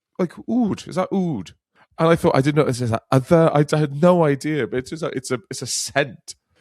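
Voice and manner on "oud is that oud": put-on broad, thick Irish brogue, pitched up. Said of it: "in a thick Irish accent ask me about oud".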